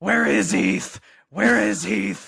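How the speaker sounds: very loud, rough, slow, drawn-out bellow.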